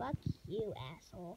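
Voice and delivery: nasal put-on voice. Two friends take turns doing their impressions; this one in Flowey voice. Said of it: "That was my Flowey".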